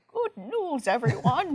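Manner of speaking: high cartoon scientist professor voice. Trying out the impression he wants to improve: Professor Farnsworth voice. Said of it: "I want to improve my Professor Farnsworth impression".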